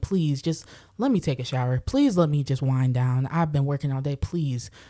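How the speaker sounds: put-on begging, pleading tone. Retelling asking to shower and wind down after working all day: imitating own begging. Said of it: "I'm begging him".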